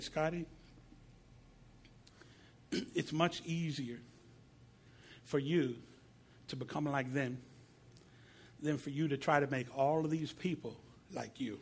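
soft, tender, calm, still and loving voice. Recounting what God told him, the speaker retells it in a God-like, loving, still voice. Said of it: "In this God-like, loving, still voice thing".

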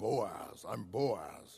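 very low, very deep big-dude voice, drawn out. Describing how the name Boaz sounds, deep Boaz voice. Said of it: "You hear this deep voice".

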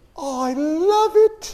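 put-on very slow, soft, high little-girl voice, British accent. Showing Carrie L. how a little girl with a new dress talks: little girl British accent. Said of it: "the little girl's all speaking a British accent".

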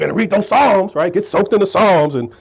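put-on, scolding, angry old man voice.

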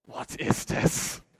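put-on low menacing voice. Retelling being caught with carrot in the mash, imitating Melissa, low and menacing. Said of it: "in a low and menacing voice".

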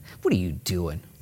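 mock condescending, put-on patronizing tone. Voicing how the enemy questions you whenever you try to do good; mock-condescending question. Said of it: "condescendingly use toward you".

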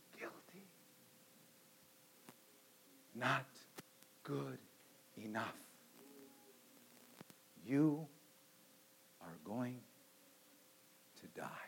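drawn-out, slow, very quiet whisper. Acting out what Satan says into our right ear: Satan whispering. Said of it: "And he whispers".

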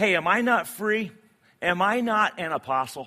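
sassy attitude. Reading Paul's questions aloud from the letter: Paul with an attitude. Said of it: "I kinda picture him with a little bit of an attitude".

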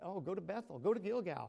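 mocking, sarcastic voice. Paraphrasing a prophet mocking worship at shrines: imitating Amos, sarcastic. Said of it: "being sarcastic here".

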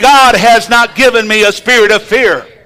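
loud, convinced, sincere-sounding delivery. Leading listeners to repeat a verse together, said like you believe it. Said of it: "say it like you believe it".

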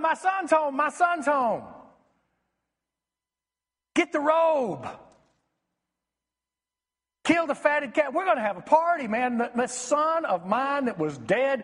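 ecstatic, overjoyed, jubilant yelling. Retelling the father running out to meet his son who came home, retelling a joyful yell. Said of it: "And then he starts yelling".

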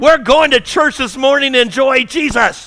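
high, frazzled, high-pitched yell. Acting out a parent in the car before church, imitating a parent yelling at kids. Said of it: "you were literally yelling at your kids".

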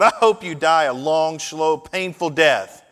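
loud, high, furious yell. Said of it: "she yelled".

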